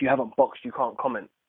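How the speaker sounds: ordinary delivery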